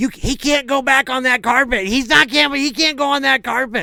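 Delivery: very high, shrill, loud scolding yell. Retelling how a little girl yelled at a brother: imitating someone yelling. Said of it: "she's yelling at my brother Dan".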